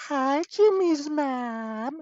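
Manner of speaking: loud, squeaky, very high cartoon voice, mom stretched out. Closing with a greeting to Jimmy's mom: Carl Wheezer voice. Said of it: "just like Carl Weezer, I gotta say".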